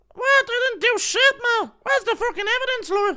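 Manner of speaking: very high, mousy, squeaky voice. Acting out Connor in court for the case, in a squeaky voice Connor impression. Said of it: "Squeaky voice Connor in court for our case impression".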